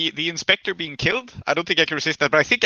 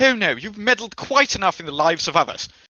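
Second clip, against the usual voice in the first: stern, commanding, authoritative voice; 3 semitones higher than usual. Telling a snake it has meddled enough: commanding voice. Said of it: "in my commanding voice".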